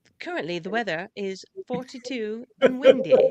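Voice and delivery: high English smart-speaker voice. Host describing their Alexa's voice before an interview: Alexa with English accent. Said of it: "She's very English".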